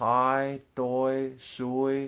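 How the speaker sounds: hai, doi, shui each held flat and high. Teaching tones, demonstrating the high tone on example words, high level tone. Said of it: "the high tones are higher up".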